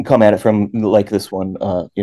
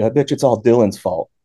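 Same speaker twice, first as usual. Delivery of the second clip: imitated offhand, joking tone; 2 semitones higher than usual. Retelling what a buddy said jokingly: retelling an offhand remark. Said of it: "he just kind of like offhandedly".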